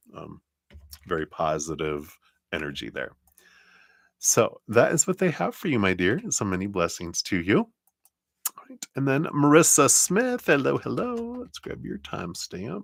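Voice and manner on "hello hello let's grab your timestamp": soft southern US accent slipping in, pitched up. Reading out a listener's name to grab their timestamp, southern accent. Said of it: "suddenly talking with a southern accent".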